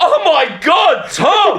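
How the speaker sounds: high, shrill, all-out full-volume shout. Speaker retelling their reaction to Tom's reply, retelling a full-volume shout. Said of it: "And I went at full volume".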